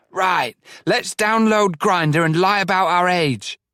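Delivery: loud, high, exaggerated stage whisper. Reading a character's aside to a friend: deliberately loud whisper. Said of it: "in a deliberately loud whisper".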